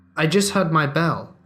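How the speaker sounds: strained, choked blurt forced out in fear. Retelling a scared reply to the man blocking the exit: retelling a choked-out line. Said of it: "I choke out without hesitation".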